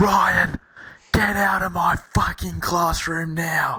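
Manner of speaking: very high, piercing, shrill, drawn-out scream. Retelling how a teacher ordered them out: imitating a teacher screaming. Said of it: "She just screams".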